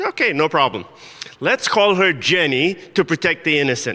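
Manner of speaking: usual speaking voice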